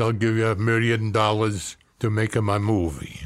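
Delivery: put-on Hungarian accent. Retelling a producer's phone offer: imitating a producer's Hungarian accent. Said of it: "a producer with a Hungarian accent who said".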